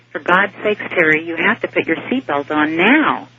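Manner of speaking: usual speaking voice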